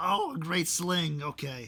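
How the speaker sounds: shouting gremlin or goblin voice. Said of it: "This man is, like, shouting".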